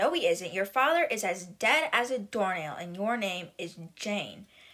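ordinary talk

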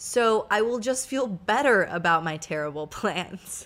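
amused, talking with words broken by laughter.

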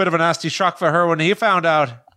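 put-on Scottish accent. Trying to name Harry Potter characters, quoting the Scottish one: Seamus Finnigan impression. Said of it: "the Scottish one".

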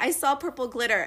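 ordinary talk

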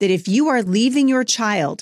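very stern, firm, severe tone. Warning the listener, in a stern voice. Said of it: "in as stern a voice as I possibly can".

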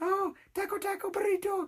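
put-on very high, soft, hushed Spanish accent. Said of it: "that's what it sounded like".

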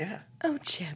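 soft, breathy, delicate princess voice. Recounting a man dressed as Belle doing his impression: breathy Belle impression. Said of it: "she has like a breathy like".

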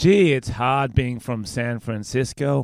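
speaking with American accent. In an accent-guessing game, doing one for the other speaker to guess, American accent. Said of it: "I'm gonna do an American accent".

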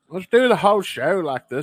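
Irish accent, pitched high and spoken loud.

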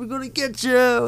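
pitched way up, all excited.

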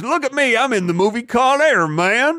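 very high-pitched, slow, drawn-out delivery. Quoting Nicolas Cage in Con Air, Nicolas Cage impression. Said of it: "That's my favorite quote from Con Air".

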